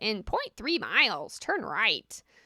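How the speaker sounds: swooping put-on parrot voice. Showing the voice used when giving people GPS directions: parrot voice. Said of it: "I use parrot voice".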